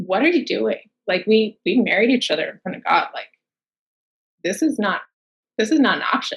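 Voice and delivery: put-on severe, serious, very stern, firm, condescending voice. Retelling what her husband said about their marriage: imitating a very stern tone. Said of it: "very sternly".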